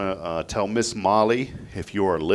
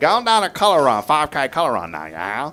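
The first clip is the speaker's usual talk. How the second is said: put-on Louisiana Cajun accent, higher and louder; 5 semitones higher, 5 dB louder than usual. Giving a co-host a sample line to try: Louisiana Cajun accent. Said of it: "Can you try it?".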